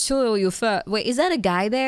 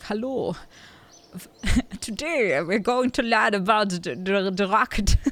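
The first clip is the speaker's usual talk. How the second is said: put-on elderly man's German accent with a lecturing tone; 2 semitones lower than usual. Imagining an old German guy giving a rocket lecture, old German man accent. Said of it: "some old German guy to be like".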